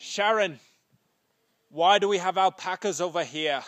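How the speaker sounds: rough, fake British accent. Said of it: "British accent".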